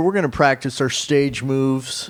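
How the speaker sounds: ordinary talk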